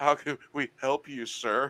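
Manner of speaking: trembling, high, shaky, frightened voice. Retelling what the guy behind the counter said: imitating a shaky voice. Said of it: "goes with a real shaky voice".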